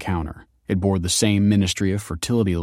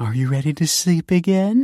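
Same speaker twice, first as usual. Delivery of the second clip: put-on very high baby-talk voice; 9 semitones higher than usual. [name] speaking to an infant after its bottle, in an infant voice. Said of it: "Said [name] in an infant voice".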